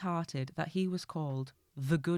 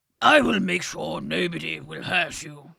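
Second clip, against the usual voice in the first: put-on very loud, wise, posh, gruff old king voice; 9 dB louder than usual. Reading a story aloud, the king speaking: old, wise, posh, gruff voice. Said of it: "old and wise and a bit posh and gruff".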